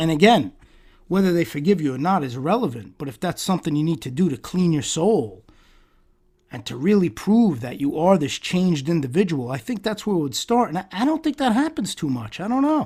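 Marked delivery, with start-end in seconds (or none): 10.7-12.9 heavy sarcasm, pitched up high. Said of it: "sensing a sense of sarcasm in my tone, and trust me, I'm giving it".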